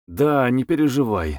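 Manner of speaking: plain reading voice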